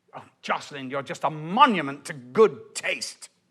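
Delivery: mock-snarling, contemptuous snarl. Quoting what he always said to jocelyn during their rows, retelling with a snarl. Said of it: "say it with such a snarl".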